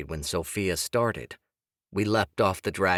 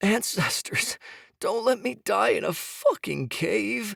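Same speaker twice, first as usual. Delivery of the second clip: very high, weak, rough, wheezing death-rattle pleading; 12 semitones higher than usual. Narrator reads Jonah's plea from up ahead in a cave, pleading weakly. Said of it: "[name] had grown weaker now. His throat had developed a death rattle, breath wheezing weakly from his lungs. / [name] had grown weaker now. His throat had developed a death rattle, breath wheezing wea".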